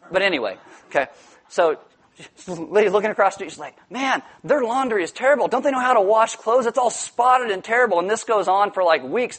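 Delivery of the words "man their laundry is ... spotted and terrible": nosy, disapproving, pitched-up griping tone. Telling a story about a lady judging laundry across the street, imitating her complaining. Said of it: "She's always complaining about the laundry".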